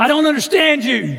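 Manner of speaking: screaming at a very high, shrill pitch. Retelling what an angry enemy finally screamed in the office: imitating someone screaming. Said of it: "he screamed this".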